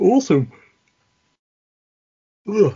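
very high, stretched, words swallowed mid-yawn. Responding at the end of a list of contacts, yawning. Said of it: "sorry, yawning".

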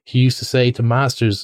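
ordinary delivery

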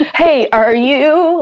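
trembling, stammering voice. Retelling greeting her weeks later while stammering, imitating own quivering voice. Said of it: "kind of quivering".

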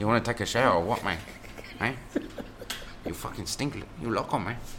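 fake Spanish-sounding accent. Riffing with a friend on someone's South American accent, in a Spanishy put-on accent. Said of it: "so it'd be Spanishy".

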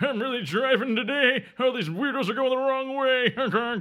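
very high, cartoonish character voice. Making fun of the other person's driving, with a Mr. Magoo impression. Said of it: "It's a really good Mr. Magoo".

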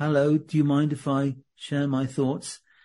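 weak, timid, meek, hesitant little voice. Speaking coach showing how not to use your voice: weak, timid voice. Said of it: "not in a weak kind of".

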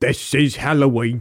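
crazy, wildly exaggerated British accent. Creating characters, the speaker voices Halloween Jack's crazy accent. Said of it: "Why do you give him the craziest accent?".

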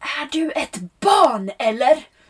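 annoyed, high-pitched shout. Retelling how someone yelled at the speaker after a water tank mistake: retelling a shout. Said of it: "Då skrek han till mig".

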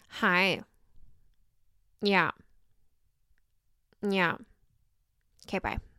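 slow, drawn-out delivery. Showing how they answer the phone: Kourtney Kardashian impression. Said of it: "my Kourtney Kardashian impression".

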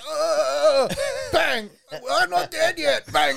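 imitated gangster voice. Retelling a movie scene where a Russian guy won't die: imitating the shot Russian guy. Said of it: "He's like".

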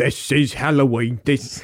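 slow, drawn-out, put-on old-film cockney British accent.

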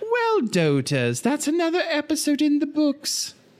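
put-on very high, swooping, sing-song old granny voice. Act out what it will say after a little harpsichord music, sounding like Mrs. Doubtfire. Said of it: "You sounded like Mrs. Doubtfire".

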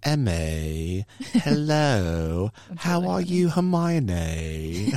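very slow, drawn-out put-on British accent. Imitating a three-year-old nephew who talks like Harry Potter: put-on British accent. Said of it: "he speaks in a British accent now".

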